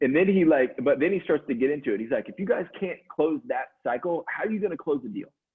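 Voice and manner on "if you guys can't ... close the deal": worked-up, fired-up, heated rant, acted out. Speaker retells what a man said while mad, imitating a fired-up mad rant. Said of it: "he's lit up on this thing".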